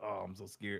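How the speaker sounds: mock scared, fearful character voice. Retelling how the main character of Wanted acts before training: imitating a scared character. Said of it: "he's all like".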